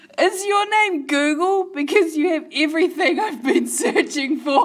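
giggly reading through laughter. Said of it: "I'll read it again 'cause I was laughing".

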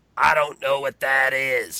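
loud, heavy chain-smoker woman's voice. Retelling asking a woman where the roof racks are, the speaker is imitating her voice. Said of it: "emulate this woman's voice".

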